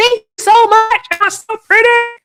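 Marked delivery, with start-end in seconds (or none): 0.0-1.0 excited, much higher and louder. Thanking TikTok followers for their support, excited. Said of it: "That's my excited voice".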